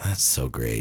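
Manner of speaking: totally deadpan, very low, flat and bored. Showing a partner how to say the phrase several ways, now deadpan bored. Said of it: "Totally deadpan bored".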